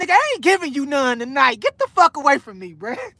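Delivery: put-on voice cursing someone out. Retelling how his baby mama turned him away: imitating someone cursing him out. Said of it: "she ain't used to curse me out like that".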